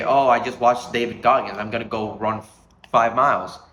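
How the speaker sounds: ordinary delivery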